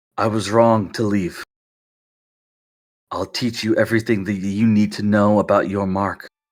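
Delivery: very low, deep, hushed half-whisper, no voice. Narrator voices your father as he moves close to you: half-whispering. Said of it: "he whispers".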